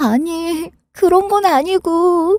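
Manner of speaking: crying while talking, tearful. A daughter answers her mother, who asks why she is crying, crying while talking. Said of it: "그럼 왜 우는데".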